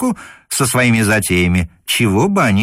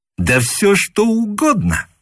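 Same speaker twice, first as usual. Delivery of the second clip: very high, emphatic, drawn-out exclaiming; 10 semitones higher than usual. A cadet replying to a dry question: exclaimed. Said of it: "— воскликнул юнкер".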